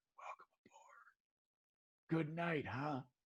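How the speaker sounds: barely audible, hushed, very quiet whisper. Voicing a character welcoming the others aboard the boat: whispering. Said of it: "Tanith whispers".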